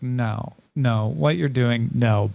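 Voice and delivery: put-on flat deadpan. Describing a show character who undermines others' enthusiasm, mimicking a flat deadpan. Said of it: "She's just very deadpan".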